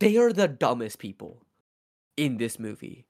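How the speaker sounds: ordinary talk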